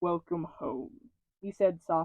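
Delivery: plain reading voice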